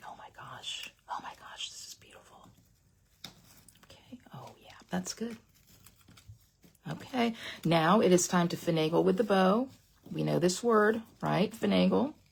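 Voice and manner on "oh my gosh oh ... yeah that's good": thrilled breathy whisper, very quiet. Showing how you react when something crafted looks pretty: excited whisper. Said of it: "I'll whisper".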